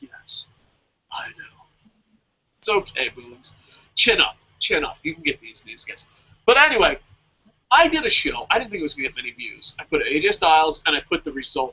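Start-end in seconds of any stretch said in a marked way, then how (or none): 0.0-1.6 mock forlorn, barely-there, sad whisper. Retelling a friend's answer about having work tomorrow, the speaker imitates a sad reply. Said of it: "it was the most saddest thing I've ever heard".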